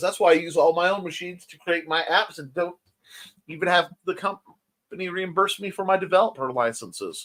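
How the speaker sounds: ordinary talk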